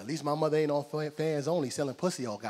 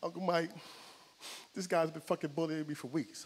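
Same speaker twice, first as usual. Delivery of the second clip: mock-crying, quieter; 2 semitones higher, 6 dB quieter than usual. Speaker retelling his nephew's phone call about being bullied, imitating a crying nephew. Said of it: "Cause he's crying".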